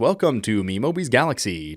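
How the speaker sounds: put-on, loud radio broadcaster announcer delivery. Podcast host demonstrating the radio voice to avoid: radio announcer voice. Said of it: "I find myself wanting to do the radio voice".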